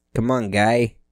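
terrible put-on Boston accent. Mocking the new host who started the show early, in a bad Boston accent. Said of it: "That's a terrible Boston impersonation".

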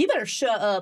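put-on country accent. Two speakers improvise a fight in an Uber, put-on country accent. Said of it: "Do our country".

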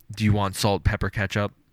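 ordinary talk

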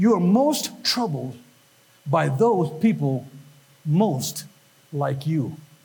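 slow, low, halting, measured, word by word. Stating a point of psychology to listeners, said real slowly. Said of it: "I'll say it real slowly".

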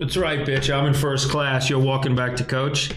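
normal talking voice

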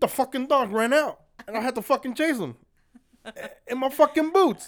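very loud, high, breathless blurted yell. Imitating a friend who came in after chasing a dog: Manny impression. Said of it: "this is my Manny impression".

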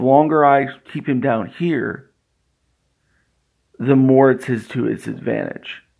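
ordinary delivery

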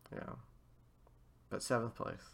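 down and quiet. Told he ranks high in league points, the player notes his seventh place, sounding down. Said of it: "Don't sound so down".

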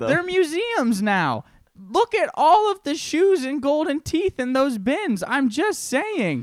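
voice climbing very high, loud and swooping. Ranting to others in the conversation, the speaker's voice keeps getting higher. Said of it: "The higher your voice is getting".

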